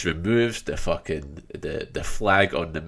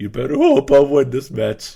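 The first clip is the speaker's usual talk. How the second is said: put-on cracking voice, higher and louder; 8 semitones higher, 10 dB louder than usual. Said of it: "His voice is cracking a lot".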